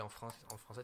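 ordinary talk

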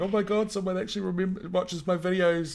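mock excited gush. Speaker recalls a viewer appearing in one of their videos, retelling own excitement. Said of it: "I got all excited".

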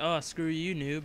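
ordinary talk

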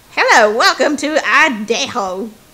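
slow, drawling, laid-on put-on Southern accent. Voicing a restaurant greeter while reading a scene aloud: put-on Southern accent. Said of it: "I'm Southern".

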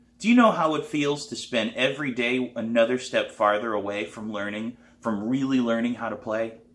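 ordinary delivery

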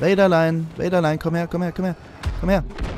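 sing-song voice like talking to a pet.

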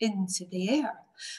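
ordinary delivery

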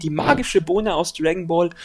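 ordinary talk, nothing marked

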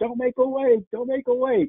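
mock, very high-pitched shouting, repeated. Retelling yelling at a passing boat: imitating own past yell. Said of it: "I started yelling at it".

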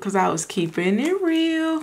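drawn-out, high-pitched voice.

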